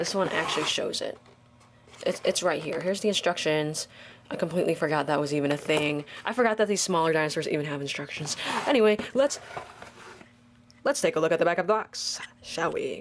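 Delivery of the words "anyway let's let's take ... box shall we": very fast, rattled-off rapid-fire chatter. Unboxing toy dinosaurs and turning to the back of the box: talking very fast. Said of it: "Could I have said that any faster?".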